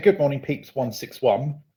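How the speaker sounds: ordinary delivery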